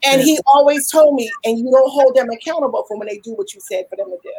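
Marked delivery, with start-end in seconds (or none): none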